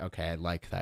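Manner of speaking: ordinary talk, nothing marked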